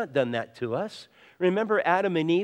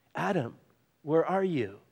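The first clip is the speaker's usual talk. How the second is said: put-on heartbroken, loving voice; 3 dB quieter than usual. Retelling the call to adam, voicing a broken-hearted father. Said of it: "the voice of a broken-hearted father who loved his kids".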